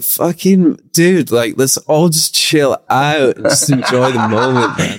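spaced-out, stoned talk. Retelling what they said while stoned in the band: imitating his stoned past self. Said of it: "I was like".

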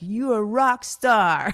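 put-on loud Russian-accented call. Recalling running off to meet her sister, speaker retells her sister's Russian-accent yell. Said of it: "she yells out in her Russian accent".

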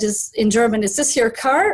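ordinary delivery

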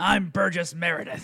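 gravelly yelling voice. Introducing oneself on the show as Burgess Meredith: Burgess Meredith impression. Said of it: "Burgess Meredith, by the way, really easy voice to do".

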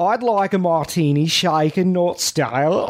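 exaggerated Australian accent. Trying the accent again after being told to stick with it, over-the-top Australian accent. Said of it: "My Australian accent is so over the top".

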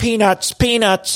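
put-on high, old-timey, old-fashioned ballpark vendor hawker cry. Retelling how a woman suddenly acted old-timey at a baseball game, old-timey ballpark vendor. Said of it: "old timey, I'm at the baseball game".

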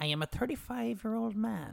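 put-on creepy man voice, creaky.

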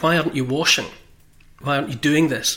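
mock-stern, acted stern tone. Storyteller quoting one man speaking to another, mock-stern questioning. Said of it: "said to Levy quite sternly".

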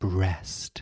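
slow, long drawn-out breast. Last word in a list, especially said slowly: slowly drawn-out breast. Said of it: "especially if it's said slowly".

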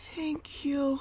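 put-on tiny, small, soft, high little voice. Imagining what he says when they're done: imitating his little voice. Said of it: "in his little voice being like".

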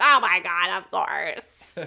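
very loud, very slow, eager yes, bad impression. Imagining a friend's eager answer: terrible impersonation of Wendy. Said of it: "That was a terrible impersonation of her".

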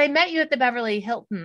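usual speaking voice

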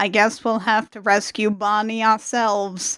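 put-on dead flat monotone, no inflection, lifeless. Quoting a character's reaction to hearing the news, flat, no inflection. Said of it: "without any kind of inflection".

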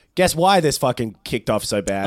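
ordinary talk

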